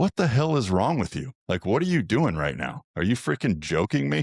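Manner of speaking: furious, high, swooping angry yell. Retelling yelling at a kid during warm-up: retelling yelling at someone. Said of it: "I'm freaking yelling at this kid".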